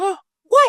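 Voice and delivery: put-on high, loud astonished kid cry. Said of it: "And Charlie goes".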